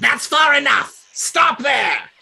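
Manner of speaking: shrill, very high-pitched loud call. Voicing an unseen voice calling down from a huge tree: calling down loudly. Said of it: "you hear a voice call down to you".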